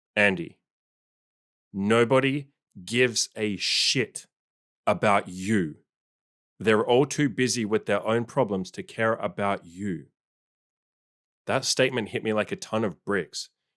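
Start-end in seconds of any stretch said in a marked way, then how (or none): 0.2-10.1 put-on blunt, slow, dead-serious matter-of-fact tone. Recalling what his dad told him; retelling dad's serious, matter-of-fact voice. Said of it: "in the most serious, matter of fact voice he could muster".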